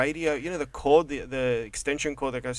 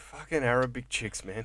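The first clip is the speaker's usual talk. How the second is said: put-on under-breath mutter, quieter; 5 dB quieter than usual. Imagining what the other speaker's dad would say: imitating a muttered curse. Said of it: "Your dad will be under his breath just went".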